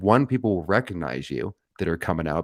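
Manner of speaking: usual speaking voice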